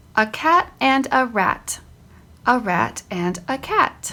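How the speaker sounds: very slow, expressive read-aloud with pauses. Reading a short passage aloud as a model for students: modeled reading with inflections and pauses. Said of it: "I want to model it for them".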